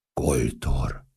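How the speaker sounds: trance-like whisper. An onlooker hears the name spoken and repeats it to himself: whispered in a trance. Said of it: "Suttogta maga elé révületben".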